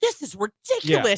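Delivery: put-on British accent, plain conversational speech. Retelling a talk-show host's reaction to an early wake-up: James Corden impression. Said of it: "in his British accent".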